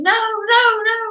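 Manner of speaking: piercing, very high, full-volume shriek. Retelling a chicken running into the pig pen: retelling own scream. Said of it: "And I was screaming".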